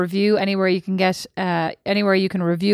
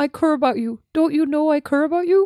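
put-on Canadian accent, pitched up; 7 semitones higher than usual. Doing an accent for others to guess, Canadian accent.

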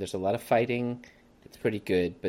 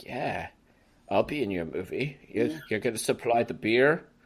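put-on Australian accent. Acting out a man agreeing to be in the movie, in an australian accent. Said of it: "That was my Australian accent".

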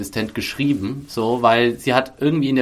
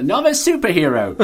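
put-on strong British accent, higher; 5 semitones higher than usual. Joining in imitating a character's stronger British accent: Fitz with strong British accent. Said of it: "einen stärkeren britischen Akzent".

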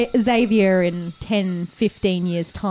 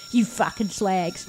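put-on mean voice, quieter; 3 semitones lower, 6 dB quieter than usual. Describing cyberpunk figures in a game, the narrator voices one in a generic mean voice. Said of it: "one of them sounds like my fucking generic mean voice".

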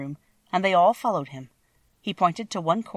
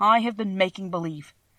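ordinary delivery

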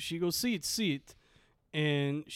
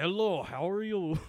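heavy put-on Russian accent, thick and slow; 2 semitones higher than usual. Retelling how a woman greeted him when he came in: thick russian accent. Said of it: "I'm trying to see if I can do a Russian voice".

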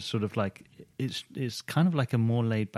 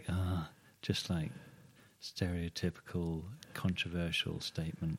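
resigned, giving-up tone; 3 semitones lower, 8 dB quieter than usual. Mimicking how the other speaker just said something: imitating a resigned tone. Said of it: "you said that in a resigned way".

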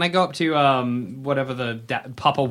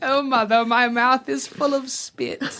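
put-on Cockney British child voice, higher pitched; 11 semitones higher than usual. A game master voicing an elf, in a Cockney British child voice. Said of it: "More like a Cockney British child than an elf".

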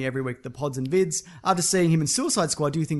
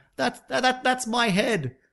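mock child yell, higher pitched; 8 semitones higher than usual. Recalling noisy kids at the back, imitating a kid yelling out. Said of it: "a kid yells out".

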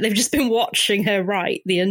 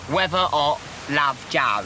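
camp put-on voice, lower pitch; 4 semitones lower than usual. Doing an impression of Jo writing a postcard: sounds like Alan Carr. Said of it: "he sounds like Alan Carr".

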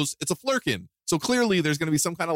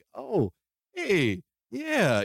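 high, swooping, wide-eyed voice; 5 semitones higher than usual. Describing how a character used to act: imitating a wide-eyed Nick Fury. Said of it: "just wide-eyed and like".

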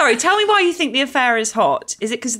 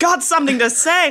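high-pitched, tongue-tied, stumbling stammer; 6 semitones higher than usual. Retelling how Big can't get his words out to Carrie: imitating Big stammering. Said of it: "blithering man who can't string a sentence together".

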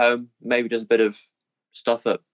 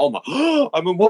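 put-on astonishment; 9 semitones higher than usual. Acting out the conductor's first astonishment at being a woman: imitating astonishment. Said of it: "I've gotten over how".

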